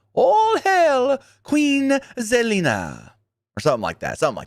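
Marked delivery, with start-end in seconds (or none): 0.1-3.1 put-on English accent, very high, slow, drawn out. Act out Queen Zelina bragging to the crowd, in Zelina Vega's English accent. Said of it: "Vega also talked with an English accent".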